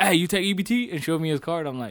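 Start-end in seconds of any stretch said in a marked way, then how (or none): 0.0-0.9 loud, high-pitched hollering. Retelling a customer at the register asking about EBT: imitating a customer yelling. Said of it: "he yelled".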